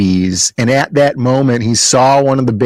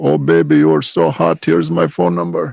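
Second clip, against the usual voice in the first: put-on Indian accent, pitched up; 5 semitones higher than usual. Imagining comments from Indian guys on a comic-book post, in an Indian accent. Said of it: "it sounds Indian when you say it like that".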